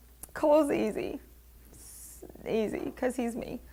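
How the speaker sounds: choked-up, hushed, tearful near-whisper. Speaker closing a talk, close to tears. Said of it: "I'm going to cry".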